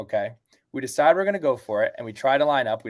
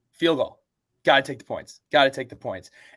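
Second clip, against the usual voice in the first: ordinary delivery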